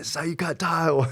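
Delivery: loud, high-pitched yelling. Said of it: "I'm, like, yelling over his ear".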